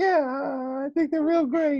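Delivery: very high-pitched, cartoonish mouse voice. Answer as Paul Dano when asked to say something, in a high-pitched Mickey Mouse voice. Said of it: "Why is he Mickey Mouse?".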